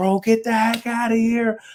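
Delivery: very high, excited screaming yell. Speaker retells yelling on the phone from a barber shop, retelling a scream on the phone. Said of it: "I'm screaming, like I'm yelling on the phone".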